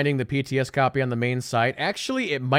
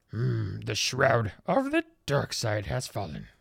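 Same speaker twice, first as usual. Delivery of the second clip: croaky, soft voice with swooping pitch; 3 semitones lower, 5 dB quieter than usual. Thanking a new follower, then slipping into a Yoda voice. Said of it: "That's my Yoda voice".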